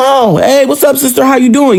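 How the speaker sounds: put-on laid-back casual voice. Retelling the own casual reply at the door: imitating a very chill reply. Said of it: "very, very chill".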